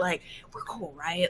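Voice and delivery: hushed whisper. A character with an arm around another's shoulder speaks to him, whispering. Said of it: "And Rowan's whispering".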